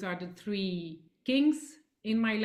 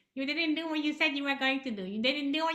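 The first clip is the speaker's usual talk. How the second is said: put-on, high-pitched, persistent nagging scold; 6 semitones higher than usual. Voicing the nagging voice at the back of your brain; imitating a nagging inner voice. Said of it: "this nagging voice".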